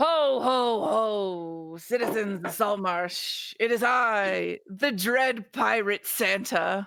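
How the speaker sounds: every "ho" stretched out long. Storyteller voicing a figure calling down from above the listeners, booming Pirate Santa voice. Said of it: "suddenly hear a booming voice above you, which I'm gonna do my best here".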